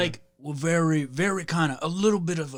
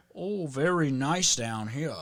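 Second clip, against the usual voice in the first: put-on, slow, proper, fancy Virginia accent. Imitating how Virginia people sound: put-on proper Virginia accent. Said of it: "they seem so much more proper".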